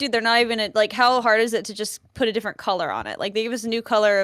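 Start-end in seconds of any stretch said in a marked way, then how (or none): none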